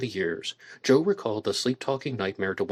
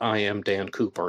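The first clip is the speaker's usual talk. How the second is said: ordinary talk, nothing marked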